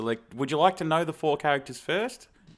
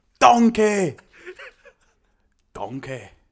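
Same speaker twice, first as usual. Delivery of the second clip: put-on ogre voice, higher and louder; 8 semitones higher, 7 dB louder than usual. Performing a requested impression on a countdown: Shrek voice. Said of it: "give me your best shirk in three".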